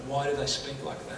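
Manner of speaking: ordinary delivery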